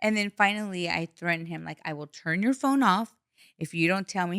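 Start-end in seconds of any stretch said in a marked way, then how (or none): none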